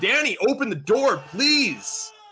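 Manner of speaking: very high-pitched, loud, pleading scream. Narrating a game scene, a character bangs on a locked door; screaming plea. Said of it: "as he's screaming it".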